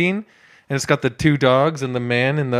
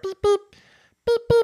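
put-on tiny cute car voice, higher pitch. Showing listeners at home the tiny car: tiny cute car impression. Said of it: "that car".

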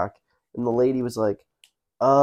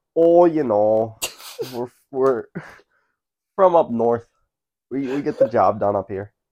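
best attempt at a put-on Canadian accent. Asked by the other speaker for their best canadian accent: canadian accent. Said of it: "give me your best Canadian accent right now".

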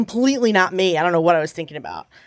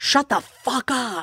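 mock venomous, furious, mean, drawn-out, words spat out; 5 semitones higher, 4 dB quieter than usual. Retelling finally snapping at a woman hurling insults, retelling a furious scream. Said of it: "as loud and as mean as I possibly could".

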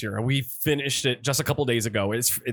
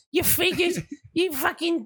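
put-on nasal woman voice, higher pitched. Imitating a friend who turns into Fran Drescher when drunk: imitating Fran Drescher. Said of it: "she basically turns into Fran Drescher".

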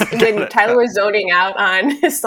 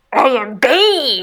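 put-on villain voice; 3 semitones higher than usual. Asked to give it a try too, says a line in Bane voice. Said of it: "can you also give us that, please?".

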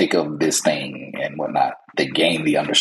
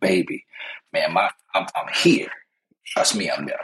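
ordinary talk, nothing marked

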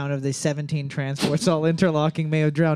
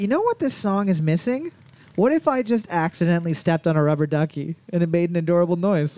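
ordinary delivery

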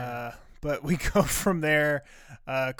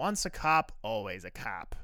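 put-on slow, deliberate, strong Chicago accent; 3 semitones lower, 5 dB quieter than usual. Recapping a scene, quoting Frank's line in an imitation Chicago accent. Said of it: "Said in my best imitation Chicago accent".

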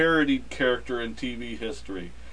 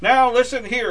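shrill, very high, loud raised voice; 11 semitones higher, 7 dB louder than usual. Recalling a show that parodied the actor, doing the Barney Fife voice. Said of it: "in the Barney Fife voice".

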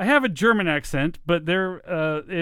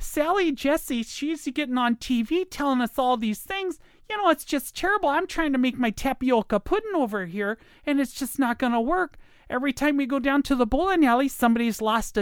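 high female voice with Minnesota accent; 7 semitones higher, 3 dB quieter than usual. Showing off one of the accents the speaker likes best: female Minnesota accent. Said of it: "one of the biggest ones I like is like from Minnesota".

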